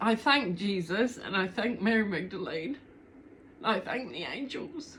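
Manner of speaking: tearful voice, speaking through tears. Giving thanks while apologizing for being tearful, speaking through tears. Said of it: "I'm sorry I'm crying".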